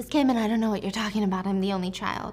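ordinary talk

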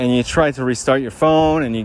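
normal talking voice

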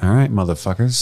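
ordinary talk, nothing marked

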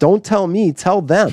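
loud, high hollering. Recalling a meeting, the speaker quotes their boss across the room, retelling a boss's shout. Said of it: "at the top of his lungs".

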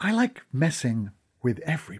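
secretive, confiding, conspiratorial whisper. Reading a story where a character leans in to share a secret: conspiratorial whisper. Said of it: "in a conspiratorial whisper".

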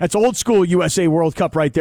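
ordinary talk, nothing marked

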